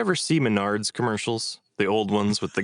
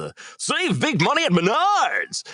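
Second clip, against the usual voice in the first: put-on over-the-top old-school radio announcer, very high, swooping; 3 dB louder than usual. Talking about stores' over-the-top commercials, in a Menards commercial announcer voice. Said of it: "way over the top, old school radio sound".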